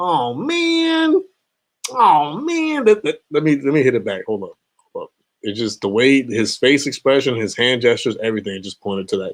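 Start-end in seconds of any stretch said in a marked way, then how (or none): 0.0-2.9 "man" drawn out, very high, slow, swooping cartoon voice. Describing how a man in a video sounded, the speaker does a Swiper from Dora voice. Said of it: "he sounded like freaking Swiper from uh Explorer".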